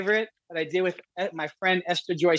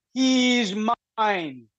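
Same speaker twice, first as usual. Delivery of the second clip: lightly thunderous, grand, proclaiming delivery; 3 semitones higher than usual. Retelling a vision, the speaker quotes Jesus pointing at him, in a thundering voice. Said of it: "he said in a thundering voice".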